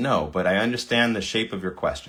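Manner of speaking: plain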